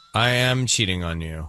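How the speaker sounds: low, level, emotionless robotic monotone. Repeating Kara's words to show her tone, in a flat robotic monotone. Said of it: "It's almost like she's a robot".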